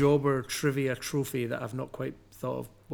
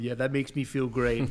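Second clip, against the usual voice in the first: put-on laughter while talking. Retelling a coworker laughing while others complain: imitating someone laughing while talking. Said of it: "you're just sitting there on the other side laughing, going".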